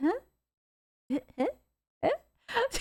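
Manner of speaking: play-acted very high, blank, empty-headed huh. Imitating a woman who has zero thoughts behind her answer: imitating a vacant huh. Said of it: "There is zero thoughts behind that. She's like".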